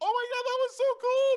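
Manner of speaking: excited, very high, loud gushing voice.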